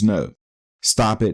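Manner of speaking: normal talking voice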